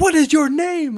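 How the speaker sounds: mock, very high, shrill, loud scream. Recounting pretending to call the cops on a man, retelling a scream. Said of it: "I started screaming like".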